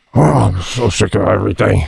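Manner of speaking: indistinct muttering, half to oneself. Imagining walking around the house at home complaining, mumbling. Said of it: "just mumbled like".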